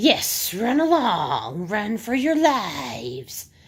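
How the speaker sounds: hissing, raspy, swooping voice, "lives" dragged out. Reading a story aloud, the soothsayer calls to the children in a raspy, hissing voice. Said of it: "came a raspy, hissing voice".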